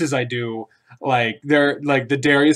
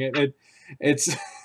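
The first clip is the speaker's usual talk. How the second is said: ordinary talk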